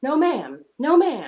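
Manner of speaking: very loud, drawn-out scolding yell. Speaker acts out a woman calling her dog back; retelling a yell at a dog. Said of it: "like yelling at her dog".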